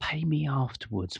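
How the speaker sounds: quiet, hushed stage half-whisper. Retelling what the man at the door told latecomers: imitating someone half-whispering. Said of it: "And he just whispered".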